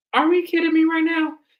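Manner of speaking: high, incredulous disbelief. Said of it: "I'm just like".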